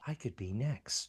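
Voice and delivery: very hushed, level, calm, slow mutter under the breath. Quoting a pilot watching his wingmen get shot down: Rick saying it calmly under his breath. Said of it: "he says very calmly under his breath".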